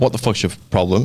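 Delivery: normal talking voice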